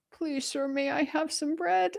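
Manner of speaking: pitiful, soft, high little street urchin voice. Mocking a claim of crawling in for bread: mock pitiful street urchin voice. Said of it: "this poor little waif, this little street urchin".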